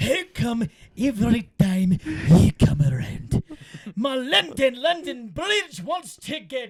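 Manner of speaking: Scottish brogue throughout. Pitching sentences for a partner to repeat in accents: William Wallace Scottish accent. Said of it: "Scottish, easy. Think William Wallace".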